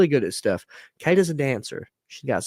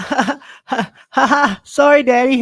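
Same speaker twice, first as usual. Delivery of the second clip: put-on toddler laughing while crying, higher and louder; 11 semitones higher, 7 dB louder than usual. Retelling how a daughter apologized after juice spilled: imitating Kenna laughing through tears. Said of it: "and tears still coming, she goes".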